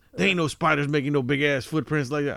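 put-on tough gruff voice. Retelling a friend's reply about spider footprints: Mr. T voice. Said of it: "why does Rusty sound like Mister T?".

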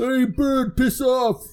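angry, high, loud ogre yelling voice.

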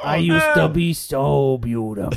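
slow, drawn-out, gravelly voice. Joking about Carrie Fisher in the later movies: gravelly Carrie Fisher voice. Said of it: "her voice is gravelly by these movies".

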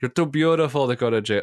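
put-on bad, failed Scandinavian accent. Act out a man enamored of Mary, a complete stranger, speaking to her in a failed Scandinavian accent. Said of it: "That's not a Scandinavian accent".

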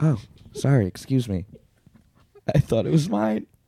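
honeyed, sweet-sounding, polite voice. Acting out the other person in the scene, sweet voice. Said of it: "you hear a sweet voice saying".

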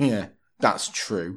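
hushed, very quiet, a little sarcastic. Retelling a character's reply about Jeff: imitating a sarcastic reply. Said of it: "we get a little sarcastic".

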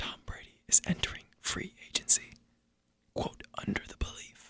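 breathy, hushed ASMR whisper right at the mic. Reading a sports report aloud on request, as ASMR: ASMR whisper. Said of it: "I'm gonna whisper it for you".

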